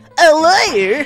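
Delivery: high, nerdy-sounding voice. Voicing the prisoner Professor Harebrain in a game: nerdiest voice ever. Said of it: "we're gonna give this guy the nerdiest voice ever".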